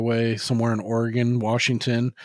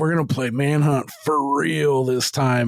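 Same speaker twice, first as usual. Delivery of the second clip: mock, put-on screaming; 3 semitones higher, 4 dB louder than usual. Retelling what the captor said after they woke up: imitating someone screaming. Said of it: "he's screaming at him".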